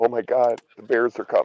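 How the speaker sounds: put-on shaking, fearful voice. Picturing the other speaker alone in the house: imitating someone shaking in fear. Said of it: "shaking, going".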